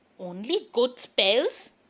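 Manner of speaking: hissing in a huff. Narrating a story, voicing the witch answering the girl: hissing in a huff. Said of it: "Hissed the witch in a huff".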